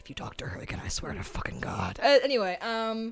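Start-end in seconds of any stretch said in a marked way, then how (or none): 0.0-2.0 low, menacing, breathy whisper. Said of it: "Where did that voice come from?".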